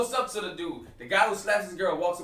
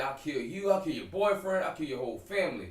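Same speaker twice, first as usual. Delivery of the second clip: normal talking voice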